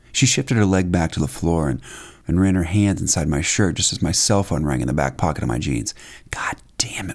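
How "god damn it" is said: breathy, hushed whisper. His cell phone rings while she touches him; whispered. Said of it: "I whispered".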